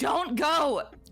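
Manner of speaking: very high-pitched, loud crying out. A player speaking aloud as her character during a tabletop game, crying out. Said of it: "she just cried out".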